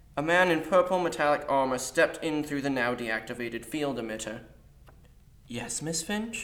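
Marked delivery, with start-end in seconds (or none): 5.5-6.5 soft, creepily bright, chipper, eerily cheerful tone. An armored guard answers the teacher who summoned him: eerily cheerful. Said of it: "replied an eerily cheerful voice".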